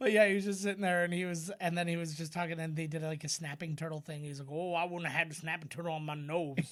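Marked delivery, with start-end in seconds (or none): 4.5-6.7 put-on Louisiana Cajun accent. Retelling what a guy said about a snapping turtle, imitating a cajun accent. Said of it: "That's a great impression".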